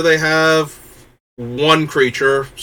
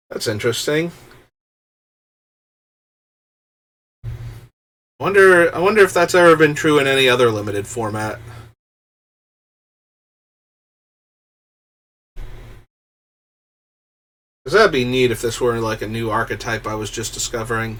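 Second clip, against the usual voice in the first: sarcastic musing voice, faking wonder and interest; 3 semitones lower, 3 dB quieter than usual. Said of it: "Being sarcastic".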